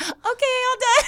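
sweetest, nicest high voice. Retelling how she announced she was finished, imitating her sweetest, nicest voice. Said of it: "in the sweetest, nicest voice said".

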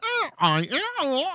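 woman's voice, pitched very high. Describing a strange voice heard during the call: imitating a woman's voice. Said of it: "some woman's voice going".

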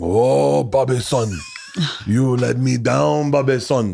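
over-the-top put-on Korean accent, very slow and drawn out. Retelling a man playing another man's father in scream therapy, with an inappropriate mock korean accent. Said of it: "very inappropriate accents of each other's".

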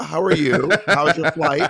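put-on grown-up tone. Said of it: "You also talk to them like they're adults".

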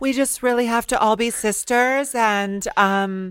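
high sweet-talk voice. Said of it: "she's also doing this, like, very, um, high voice".

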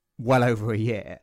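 plain

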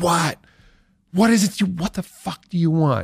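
mock very high, dragged-out furious shout. Retelling being interrupted by knocks during a take; imitating own angry yelling. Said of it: "I just started yelling like".

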